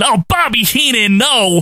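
acted repulsed outcry, high and drawn out, disgusted. Retelling a detective's line on seeing a disguise: imitating a disgusted yell. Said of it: "gives his disgusted".

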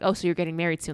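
usual speaking voice

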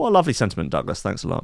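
normal talking voice

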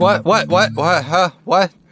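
dazed, bewildered, high-pitched confused stammer. Playing a character who lost a lot of blood: acting dazed from blood loss. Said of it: "I lost a lot of blood there, dazed".

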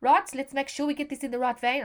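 put-on fast, broad, butchered South African accent. Quoting a funny man about to put in a cannula: broad South African accent. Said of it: "I'm sorry if I've just butchered the South African accent".

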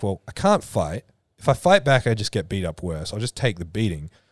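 plain

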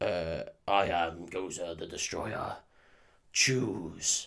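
big, deep, spooky voice, every word dragged slowly. Retelling a movie scene, in a big spooky Gozer voice. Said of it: "A big spooky voice goes".

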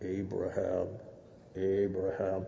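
low voice, called out from above. Telling the Abraham story, voicing the angel calling from heaven in a God voice. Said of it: "that's my imitation of God voice".

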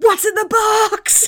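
high, loud, slow mock yell.

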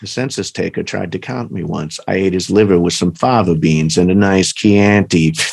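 very low, dropped killer's voice. Speaker runs through impressions for the others, then does a Hannibal Lecter impression. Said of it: "And then I do Hannibal Lecter".

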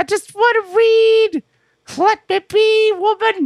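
voice pitched way up in the very top register. Retelling what Rusev said to Lana, high-pitched Rusev impression. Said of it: "And he's like".

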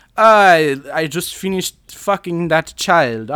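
put-on European accent. Act out Roman Polanski greeting Jack Nicholson on the first day of filming, in a vaguely European accent. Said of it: "I'm just going to do like a vaguely European accent".

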